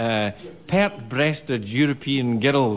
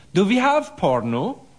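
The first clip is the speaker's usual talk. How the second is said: put-on Danish accent attempt, pitched up; 8 semitones higher than usual. Retelling what a new au pair said while flicking channels, in a put-on danish voice. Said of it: "in their best Danish voice".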